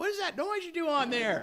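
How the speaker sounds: put-on very high, squeaky, loud cartoon child voice. Guitar teacher imitating what students always ask, in a Bob's Burgers kid voice. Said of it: "my best Bob's Burgers impersonation of a kid".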